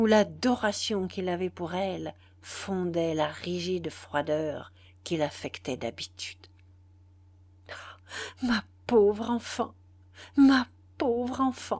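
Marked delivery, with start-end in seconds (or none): 7.7-11.8 trembling, quavering, stuttering, stammering. Overcome with sudden emotion, a man addresses a young woman, stammering, trembling. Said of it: "bégaya-t-il avec un grand tremblement".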